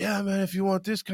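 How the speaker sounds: high, mellow, super-hippie dude voice. Speaker retells what a guy in a bar said, imitating a hippie dude. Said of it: "like a super hippie dude".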